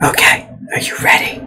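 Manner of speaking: hushed whisper. Checking a companion is ready to leave, whispering. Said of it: "Why are we whispering?".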